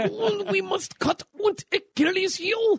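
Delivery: fake German accent, very high and slow. Speaker retries a german voice after being told the last one sounded french: put-on german accent. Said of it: "you're way better at that than I am".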